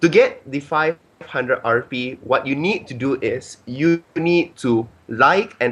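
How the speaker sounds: pretty slow, deliberate delivery. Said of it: "I'm gonna say this pretty slow".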